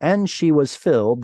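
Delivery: ordinary talk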